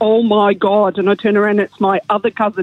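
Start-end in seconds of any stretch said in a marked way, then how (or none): 0.0-1.0 put-on thick Derry accent. Retelling a cousin calling out in a pub bathroom: imitating a thick Derry accent. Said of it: "in a really thick Derry accent".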